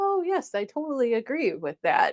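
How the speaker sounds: put-on customer-service polite niceness. Retelling what is said in a client service role: imitating being nice to a client. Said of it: "nod and be nice and say".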